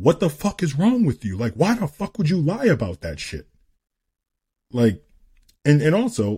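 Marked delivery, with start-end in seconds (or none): 0.0-3.5 furious, heated scolding, high-pitched and swooping. Parent retelling yelling at their daughter over a lie, retelling angry yelling. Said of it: "like yelling at my daughter".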